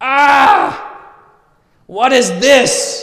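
very loud, shrill, very high, long drawn-out shriek. Retelling finding something at the back of a closet: imitating own scream. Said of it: "and I screamed".

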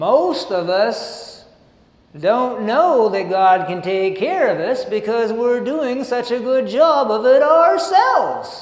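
cute Southern accent, slow, loud, preacher-like.

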